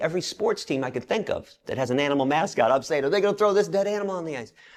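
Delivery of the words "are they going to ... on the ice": mock screaming, higher. Retelling calling in to a radio station: retelling his own screaming. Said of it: "I'm screaming".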